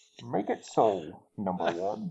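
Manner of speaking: muffled voice, as if behind hands. Showing that his Bane voice is his Picard impression, Captain Picard impression with hands over mouth. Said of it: "with my hands over my mouth".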